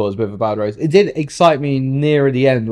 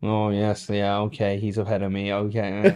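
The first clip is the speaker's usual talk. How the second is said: dull, low, drawn-out radio drone; 4 semitones lower, 8 dB quieter than usual. Imitating a driver talking over the radio: boring Piastri radio voice. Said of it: "He sounds so boring over the radio".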